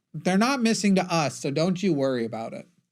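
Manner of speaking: rough, sketchy politician voice. Imagining officials dismissing the missing people: almost Ron DeSantis impression. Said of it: "my almost, uh, Ron DeSantis impression".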